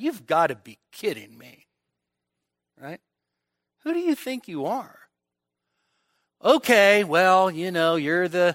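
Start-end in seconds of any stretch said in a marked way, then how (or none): 0.0-5.0 muttered under breath, lower and quieter. Speaker acting out what a man probably said, muttering under his breath. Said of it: "Peter probably muttered under his breath".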